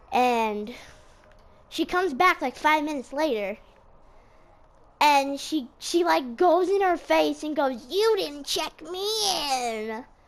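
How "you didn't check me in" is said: put-on grouchy, grumpy, accusing voice. Retelling an old lady's complaint at the doctor's office desk: imitating a grouchy voice. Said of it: "in, like, a grouchy voice".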